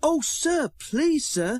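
very high, eager, excited, drawn-out cry. A narrator reads the engines' reply to their controller: crying out excitedly. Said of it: "cried the engines excitedly".

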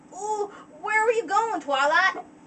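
put-on high, country-style southern accent, pony voice. Voicing a character's line as best they can, in Apple Bloom accent. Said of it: "that's the best accent I can do for Apple Bloom".

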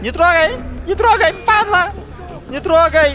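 loud, high-pitched yelling.

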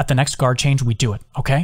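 ordinary delivery, nothing marked

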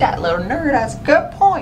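low, grumbling aside.

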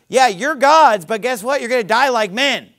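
sarcastic, mocking delivery. Showing how a verse sounds when read as sarcasm: sarcastic. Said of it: "It's sarcasm".

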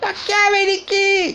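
impatient, losing patience, very high pitch. Narrator reads a wife questioning her husband: impatient. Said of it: "Si spazientì lei".

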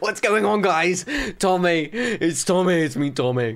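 horrible, bad put-on British accent. Speaker tries a shout-out greeting to viewers, in a bad British accent. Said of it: "Never do British accent again".

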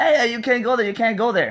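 high yell in a woman's voice. Retelling a staff member stopping the photo: imitating a woman yelling. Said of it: "the lady was just yelling".

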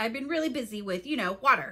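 plain reading voice

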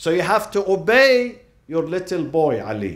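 loud, swooping, mocking, sarcastic jeer. Retelling how the laughing crowd taunted Abu Talib: imitating a sarcastic taunt.

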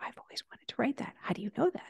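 soft, stunned, awed whisper.

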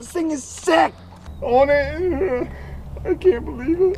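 tearful, high crying speech, "it" drawn out. Receiving a truck as a gift from another speaker: crying while talking. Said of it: "Are you crying?".

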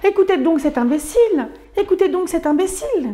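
high, chirping, twittering voice like little sparrows. A story narrator voices the local sparrows answering Nils, as twittering sparrows. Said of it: "gazouillèrent les moineaux qui".

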